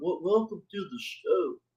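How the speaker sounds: odd affected put-on voice with stumbling, stammered start. Imitating a guy's put-on greeting voice. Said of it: "That guy does some sort of put-on voice".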